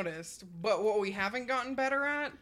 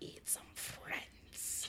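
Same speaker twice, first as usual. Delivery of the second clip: creepy voice, much quieter. Speaker redoing a line after being told to say it in a creepy way, creepy voice. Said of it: "in a real creepy way".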